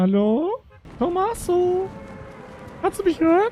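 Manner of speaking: very high put-on female voice. Calling out to Tommaso while pretending to be a woman: fake woman's voice. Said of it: "tue ich jetzt so, als wäre ich eine Frau".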